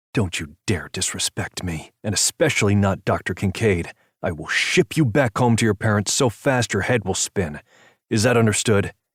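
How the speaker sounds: deep, menacing, lowest threatening register. Narrator reads Jeff warning Misha, in his deepest, most threatening voice. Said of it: "in his deepest, most threatening voice said".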